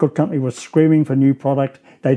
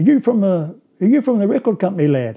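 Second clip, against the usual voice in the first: put-on London accent, slower; 6 semitones higher than usual. Retelling what a big guy stepping off the bus said to him, London accent. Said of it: "in this London accent".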